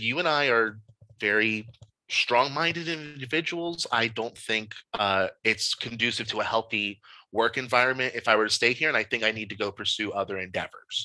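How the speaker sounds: plain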